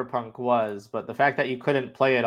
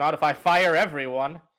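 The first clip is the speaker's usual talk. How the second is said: normal talking voice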